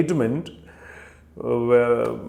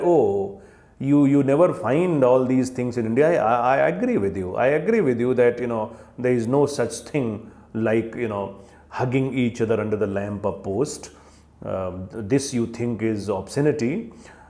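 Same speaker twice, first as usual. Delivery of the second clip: plain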